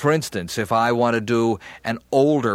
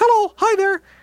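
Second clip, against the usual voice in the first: pushed-up, very high falsetto; 4 dB louder than usual. Showing why a man's falsetto doesn't sound like a kid, high falsetto voice. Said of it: "you go up in your falsetto voice".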